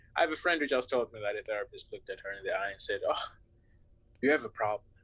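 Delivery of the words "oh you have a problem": mock patronising, condescending, talking-down tone. Retelling what a therapist told a friend: imitating a condescending tone. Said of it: "in a very condescending way".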